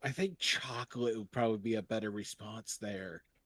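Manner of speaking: soft, leaning-in stage whisper aside. Tank leans over to comment on another character's offer, in a stage whisper. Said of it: "with a stage whisper says".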